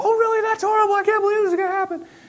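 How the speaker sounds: very high, squeaky, rushed little voice. Acting out a listener's reply to a bad-news story, in a high squeaky voice. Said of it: "start talking in a high squeaky voice too".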